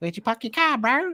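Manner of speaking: deliberately bad fake New Zealand accent, very high pitch. Mid-ramble, the speaker drops in a deliberately bad Kiwi accent. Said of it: "I do a bad Kiwi accent".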